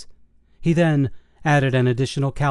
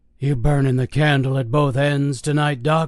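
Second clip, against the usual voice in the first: hoarse, raspy, smoke-worn voice. Reading a story aloud, voicing a guard greeting the doctor: raspy smoker's voice. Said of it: "In a raspy smoker's voice".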